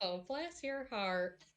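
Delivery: forced polite Southern, through gritted teeth. Player's character answers a request through gritted teeth: forced southern politeness. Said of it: "southern polite smile".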